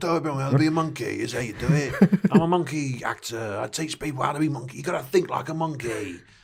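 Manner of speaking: put-on expert lecturing tone in a British accent. Imitating a British monkey acting teacher from a film: imitating a British monkey expert. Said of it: "He was this British guy".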